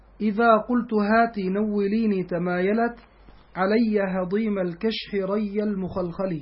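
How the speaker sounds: ordinary talk, nothing marked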